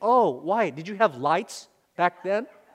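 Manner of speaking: mocking, put-on sarcastic tone. A parent acts out the sons' teasing question about the old days, mock-sarcastic. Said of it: "our boys very sarcastically say".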